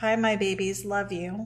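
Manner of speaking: plain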